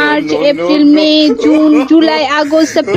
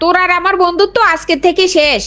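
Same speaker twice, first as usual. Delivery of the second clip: ordinary talk, nothing marked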